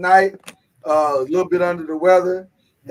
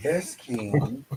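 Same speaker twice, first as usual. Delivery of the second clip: sultry, sexy, seductive voice; 3 semitones lower, 10 dB quieter than usual. Comparing two voices in the show intro, imitating Kenyatta's sexy seductive voice. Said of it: "real sexy and seductive".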